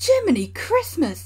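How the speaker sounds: sudden loud, high exclamation. A narrator reads the train driver's reaction on seeing what happened, exclaimed. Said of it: "exclaimed the driver".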